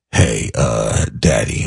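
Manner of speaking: super deep, very low bass voice. Father imitating his son, in a super bassy voice. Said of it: "my son with his super bassy voice".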